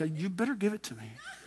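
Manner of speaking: demanding mock reverent voice, soft, with a laugh.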